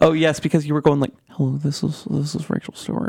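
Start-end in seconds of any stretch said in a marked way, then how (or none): 1.3-3.1 put-on ASMR voice, quieter and slower. On their radio show, teasing the co-host by imitating Rachel Stewart's ASMR voice. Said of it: "I like my ASMR voice".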